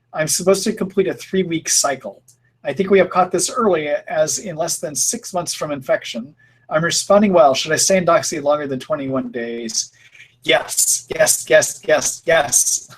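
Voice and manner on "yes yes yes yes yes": firm, hammering, emphatic, insistent repeated words. Answering Ellen's question about staying on Doxy longer, emphatic repeated yes. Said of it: "the reason I'm saying it so emphatically".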